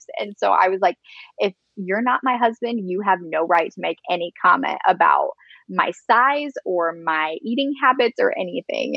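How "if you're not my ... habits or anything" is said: plain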